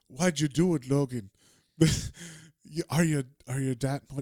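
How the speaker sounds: put-on English accent. Recounting a character's line from a scene, in an english accent. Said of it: "now I'm saying it like an English person".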